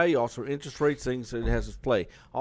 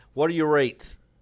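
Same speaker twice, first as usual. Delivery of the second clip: play-acted pushy, loud, demanding, with attitude; 4 semitones higher, 5 dB louder than usual. Retelling a caller who tries to take charge: imitating a pushy caller. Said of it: "With that attitude".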